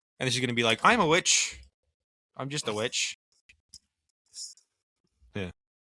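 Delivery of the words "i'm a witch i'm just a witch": put-on Scottish accent, high, slow and drawn out. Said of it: "she's got, like, a Scottish accent".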